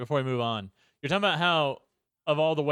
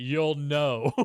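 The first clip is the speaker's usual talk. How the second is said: mock condescending, talking-down, as if to a small child. Retelling a film line to a friend: imitating Kurt Russell talking down. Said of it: "he says it like he's talking to a four-year-old".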